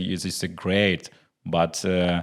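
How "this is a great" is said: plain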